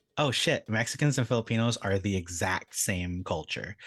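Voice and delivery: ordinary talk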